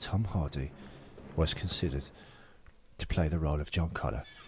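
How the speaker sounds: put-on very quiet, hushed, older film-star voice. Deliver a fact attack about Tom Hardy, switching now to an older Michael Caine impression. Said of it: "This is the older Michael Caine now".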